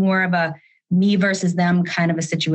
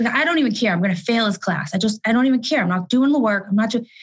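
mock huffy, mad grumbling in a child voice; 4 semitones higher than usual. Retelling what Kenny said about his teacher: imitating Kenny's angry grumbling. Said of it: "in a huff and all mad and grumbling".

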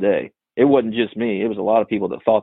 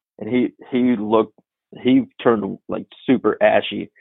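ordinary talk

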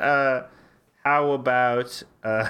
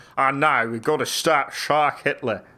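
put-on accent drifting toward Australian; 2 semitones higher than usual. Joking about a Jaws sequel, doing a Michael Caine impression slipping Australian. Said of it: "I always go into Australian".

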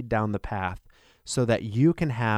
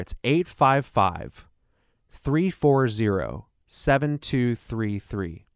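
speaking more slowly. Speaker repeats a phone number for listeners; speaking slower. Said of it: "I'll say that a little slower".

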